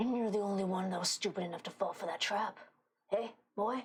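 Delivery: words growled out in a growling voice. Narrating a scene, voicing the one holding the listener down: growling voice. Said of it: "You hear the voice that is currently holding you down growl".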